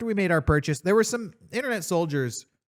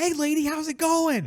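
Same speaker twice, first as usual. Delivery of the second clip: mock very shrill, high, loud shouting; 11 semitones higher than usual. Retelling a man outside a store talking to people: imitating a man shouting at people.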